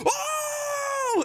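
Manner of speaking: screaming.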